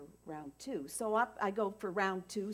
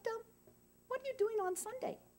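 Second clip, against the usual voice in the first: tiny, very high, quippy little voice; 3 dB quieter than usual. Retelling a friend's lunch invitation: Helen's quip little voice. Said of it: "You know how she has this quip little voice".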